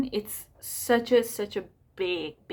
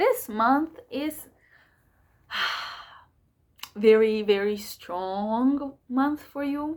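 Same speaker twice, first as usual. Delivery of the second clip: deliberately very slow, every word drawn out. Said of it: "because I'm talking so fast".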